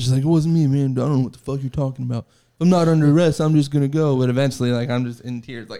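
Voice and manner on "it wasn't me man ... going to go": play-acted cocky, arrogant, dismissive tone. Retelling his own denial to an investigator: imitating his past arrogant self. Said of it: "I was so arrogant".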